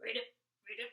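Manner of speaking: loud, croaky, croaking frog voice. Greeting boys and girls, say a word: frog voice. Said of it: "I was talking like a frog".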